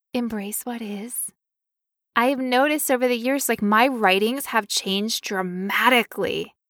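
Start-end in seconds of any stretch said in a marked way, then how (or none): 0.1-1.1 very soft, gentle, lofty and mystical voice. Demonstrating how a phrase should be said, in a gentle mystical voice. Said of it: "it sounds much more gentle".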